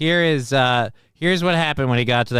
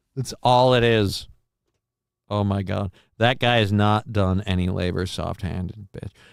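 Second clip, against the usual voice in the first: ordinary talk, nothing marked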